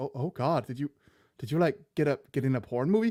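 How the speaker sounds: mock aghast, horrified, stammering, stumbling disbelief. Describing a sketch, acting out a family hearing about a girl's tv role, mock-horrified. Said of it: "they're like sitting there horrified".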